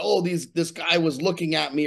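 plain

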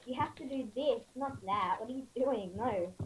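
ordinary talk

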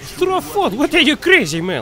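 high, loud incredulous outburst.

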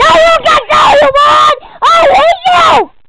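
high, loud, angry yelling.

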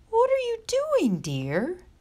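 very high, anxious, nervous, swooping tone. Mrs. bartleby asks her son, who is up the chimney, nervously. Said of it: "asked Mrs. Bartleby nervously".

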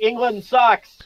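yelled out loud, high-pitched, like a heckle. A player in a role-play scene calls out a line, yelling. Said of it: "I'm gonna yell out".

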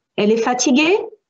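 question-like rising tune lifting on fatiguée. Showing how raising the voice turns a French sentence into a question, rising question intonation. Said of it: "I raise the voice".

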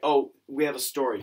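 plain

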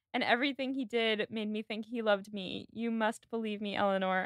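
ordinary delivery

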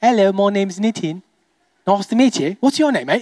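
put-on British accent laid over normal voice. Showing the audience a liked British accent: put-on British accent. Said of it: "I love the accent".

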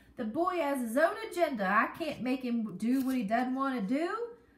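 loud, whiny, complaining voice. Reading a story, a father answers a woman's demand about his son, whining. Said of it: "he whined".

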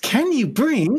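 very high, cheery, annoying robot voice. Hearing the question just asked, repeat it in that annoying TikTok voice. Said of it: "I'm hearing it in that annoying TikTok voice".

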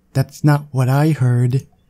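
synthetic computer voice. During a rant denying Hawking radiation, someone interjects in a computerized voice. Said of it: "in a strangely familiar computerized voice".

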